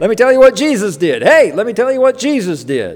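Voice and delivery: loud, high, excited voice, calling out.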